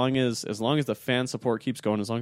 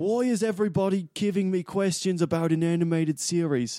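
put-on British accent, pitched up; 7 semitones higher than usual. Imitating a director annoyed by fan questions: Christopher Nolan accent.

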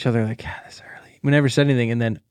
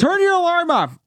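very high-pitched, shrill yell. Retelling yelling up the stairs at someone to stop an alarm: retelling own yell. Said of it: "I yell at him to turn his alarm off".

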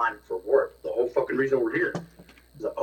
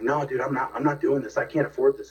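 mock panicked, freaking-out outburst. Retelling how a friend at dinner reacted to the bill: imitating a friend freaking out. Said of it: "he starts, like, freaking out".

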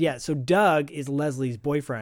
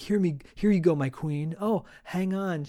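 sweet, playful, put-on cutesy voice; 4 semitones higher than usual. Retelling a scene where someone plays cutesy: imitating cutesy talk. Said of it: "playing cutesy with her".

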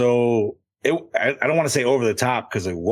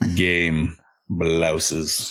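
super low monotone put-on voice, getting lower; 6 semitones lower than usual. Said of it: "super low and monotone".

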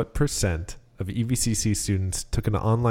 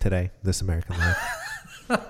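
slow, drawn-out, swooping show-host voice, roaming pitch. Asked by another speaker, doing an impression: Ira Glass impression. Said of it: "Give me your Ira Glass impression".

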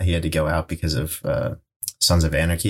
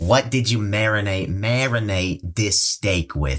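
put-on nasal New York accent, pitched higher; 3 semitones higher than usual. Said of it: "You sound like a nasally New Yorker".

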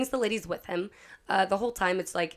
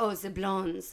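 put-on French accent; 4 dB quieter than usual. Retelling how a character greets the blondes: imitating a put-on french accent. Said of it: "he starts with, like, a French accent".

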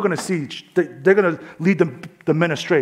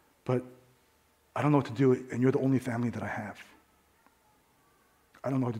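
put-on stammering, trembling woman's voice, much lower, quieter; 4 semitones lower, 10 dB quieter than usual. Retelling a young mother's plea for help, imitating a stuttering, shaking woman. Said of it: "she's like stuttering. She's like shaking".

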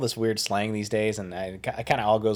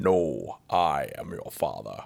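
very deep, very low, very slow drawn-out delivery; 7 semitones lower, 3 dB quieter than usual. Answering a request to sound like James Earl Jones: James Earl Jones impression. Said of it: "What does James Earl Jones sound like?".

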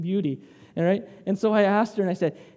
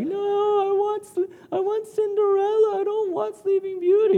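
high, whiny fake crying and whining; 13 semitones higher than usual. A parent retells pretending to cry in front of their daughter; pretend crying and whining. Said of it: "i pretend to cry and whine and i'm like".

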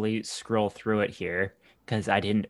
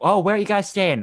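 put-on very high Boston accent; 11 semitones higher, 5 dB louder than usual. Retelling what a man with the accent said to the visiting Canadians, imitating a Boston accent. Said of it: "he had the accent and everything".

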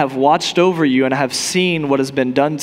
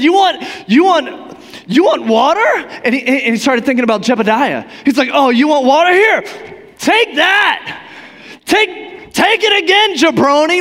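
angry, bursting delivery; 12 semitones higher, 4 dB louder than usual. Retelling Moses striking the rock: imitating Moses angry. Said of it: "he's mad, and he strikes the rock".

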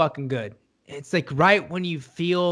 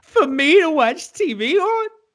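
put-on choked-up voice, higher and louder; 11 semitones higher, 5 dB louder than usual. Retelling a line Chrissy says while killing a man: Chrissy impression, choked up. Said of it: "getting so choked up about it".

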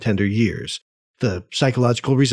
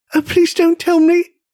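very high, frightened, terrified outcry; 3 dB louder than usual. Peter answers his father's question; terrified cry. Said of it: "Caught by a gust of terror, Peter cried".

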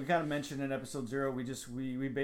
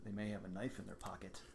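very quiet, hushed, quick, acted deadpan; 6 semitones lower, 12 dB quieter than usual. Retelling the godson's answer to a question; retelling a deadpan reply. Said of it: "he deadpans to me".

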